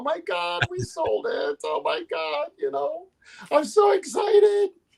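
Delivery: high, overjoyed excited gushing, mock tearful. Retelling calling the buyer after the sale, imitating own past crying. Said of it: "I'm crying".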